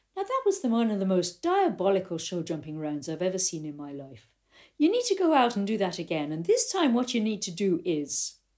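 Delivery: lilting Irish accent.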